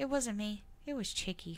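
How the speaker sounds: mock dry, dead-serious deadpan child voice. Retelling what a child said about marker on the wall: imitating a deadpan child. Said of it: "she had the deadpan thing down".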